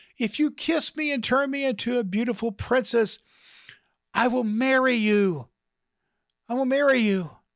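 very high, put-on feminine voice. Telling a joke, the narrator voices the frog in a man's pocket: feminine frog voice. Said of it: "the feminine voice says".

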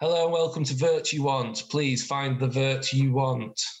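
forced, strained, put-upon tone. A young lad behind a shop counter greets visitors, with a forced smile. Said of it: "with a forced sort of smile says".

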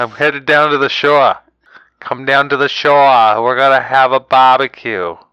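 bad, unconvincing put-on Jersey accent. Answering someone who says he can't do a Jersey accent, in a bad Jersey accent. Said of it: "What the fuck is that? That's not Jersey".

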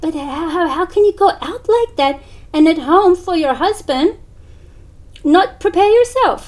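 mock stunned, very loud, high-pitched incredulous disbelief. A woman hears the speaker dresses plainly at home; imitating her shock. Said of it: "And she was shocked".

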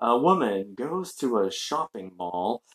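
very pious sermon voice, soft and slow. Retelling a priest's story, imitating his very pious-sounding voice. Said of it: "like a very pious sounding voice".

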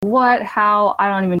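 ordinary talk, nothing marked

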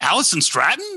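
astonished, surprised tone. Reading a name in three variations, the first one surprised. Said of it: "The one will be a surprise".

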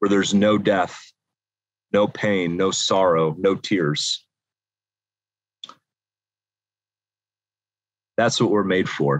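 choked-up, emotional voice. Speaking to the group about being made for life with Christ, choked up. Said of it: "I'm getting a little caught up".

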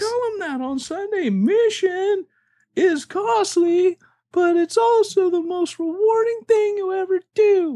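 slow, unhurried cartoon cookie voice. Repeating his own quote about mission to a co-speaker, in Shrek's Gingerbread Man voice. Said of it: "I'm speaking in the gingerbread man from Shrek".

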